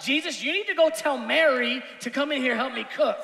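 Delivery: upset, mad, confrontational tone. Showing how to read the part in character: mad confrontational Martha. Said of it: "Martha's mad. Martha's upset. Martha's confrontational".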